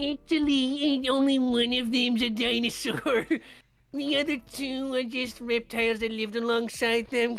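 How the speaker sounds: high nerdy voice. Speaker imagines Henry Loomis lecturing the group, in a nerdy Henry Loomis voice. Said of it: "I don't know why he's doing a nerdy voice".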